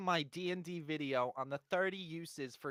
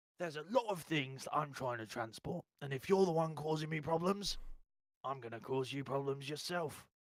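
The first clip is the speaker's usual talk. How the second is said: put-on British gangster accent. Voicing the character Hogan to the group, in Hogan's British gangster accent. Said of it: "he sound like a British gangster".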